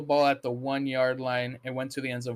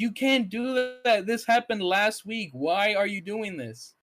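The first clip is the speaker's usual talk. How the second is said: put-on screaming, higher; 8 semitones higher than usual. Retelling how the family screamed at a fumbling player: imitating screaming at a player. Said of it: "All of us were screaming at him".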